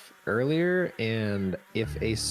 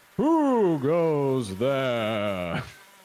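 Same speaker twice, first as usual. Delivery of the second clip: eerie, wispy spooky ghost voice, drawn-out there. A ghost answers a knock at the door, in a spooky ghost voice. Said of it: "why do you sound so spooky?".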